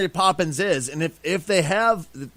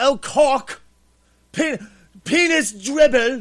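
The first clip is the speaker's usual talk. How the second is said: butchered, failed British accent, pitched up; 7 semitones higher than usual. Podcast host tries out a bad British accent for the others. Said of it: "I'm totally missing the British accent".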